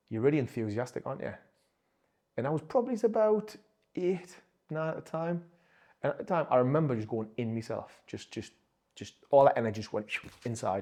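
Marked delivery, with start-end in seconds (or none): none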